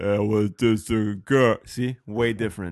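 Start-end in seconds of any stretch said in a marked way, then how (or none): 0.0-1.6 slow, drawn-out, deliberate delivery. Showing how the actor really sounds: Vin Diesel voice. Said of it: "he's more like".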